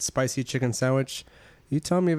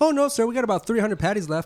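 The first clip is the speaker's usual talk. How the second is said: very high, swooping, wildly animated cheer; 9 semitones higher, 4 dB louder than usual. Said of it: "fucking animated as shit".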